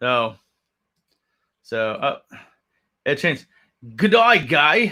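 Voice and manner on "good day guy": jokey, playful, funky put-on Australian accent. A livestreamer reads a viewer's greeting aloud, in a funky Australian accent. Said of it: "I'm reading it with a funky uh, Australian accent".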